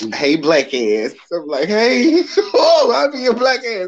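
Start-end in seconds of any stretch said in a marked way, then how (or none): 0.1-1.1 put-on broad, laid-on, thick Baltimore accent. Recalling a woman from Baltimore, the speaker quotes her in a thick Baltimore accent. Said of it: "with that thick Baltimore".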